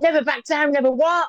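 loud high-pitched shout. Retelling how a man started shouting the phrase at the speaker: imitating him shouting. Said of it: "he starts shouting at me".

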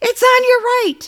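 very high-pitched, shrieked scream. Retelling warning a roommate about a spider: retelling a scream. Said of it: "I screamed again".

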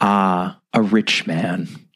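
soft-spoken. Reading the nun's reply near the story's end, said softly. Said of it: "The nun said softly".

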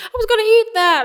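very high, shrill, loud yelling. Speaker retells a woman's reaction to a thrown-away steak, imitating someone yelling. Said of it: "she like starts yelling at me in Russian".

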